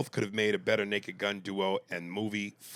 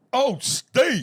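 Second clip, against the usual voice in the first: shrill, booming, high, loud belted exclamation; 11 dB louder than usual. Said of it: "in the [name] voice".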